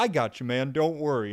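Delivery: play-acted nicest, sweetest, gentle, kind, comforting voice. Retelling what a big man said after catching the speaker, imitating a very kind voice. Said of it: "And the nicest voice ever".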